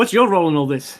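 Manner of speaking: stern, firm tone. A game narrator voices a character questioning a full elf: stern. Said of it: "voice gets a bit more stern with you".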